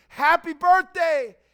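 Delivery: put-on high, very loud, thrilled, excited shriek. Acting out a mother greeting her child on his birthday: screaming with excitement. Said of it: "hears the scream".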